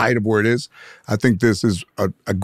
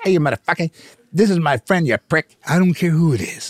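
hard, high-pitched yelling outburst; 7 semitones higher than usual. Retelling how someone jumped in to defend a friend: imitating Joe Pesci yelling. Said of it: "And Joe Pesci jumps out".

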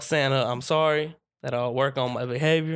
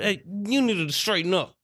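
angry scolding yell, raised and high-pitched; 6 semitones higher than usual. Retelling scolding a boy who did badly at school: retelling yelling at him. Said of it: "So I'm yelling at him and stuff".

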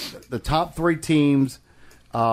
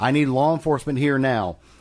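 usual speaking voice

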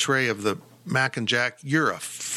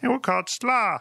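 put-on, fake German accent; 10 semitones higher than usual. Chatting about food with friends, voicing imagined 17th-century Germans: German accent. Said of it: "That was a great German accent".

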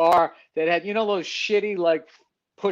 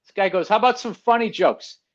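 normal talking voice

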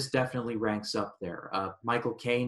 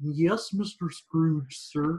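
bad put-on character voice, high and very slow; 6 semitones higher, 4 dB louder than usual. Acting out Cratchit opening the door to Scrooge, in a bad Kermit impression. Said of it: "And my bad Kermit impression".

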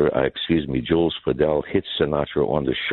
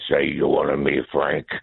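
rough, gruff, creaky front-man voice. Retelling what the Copa front man said: imitating Jules Padel's way of talking. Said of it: "And he talked like this".

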